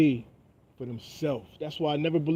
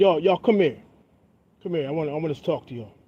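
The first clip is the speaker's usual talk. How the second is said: put-on angry, heated voice; 3 dB louder than usual. Retelling a story, the speaker imitates his friend's dad imitating an angry dad. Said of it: "And he was hot".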